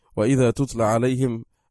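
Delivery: normal talking voice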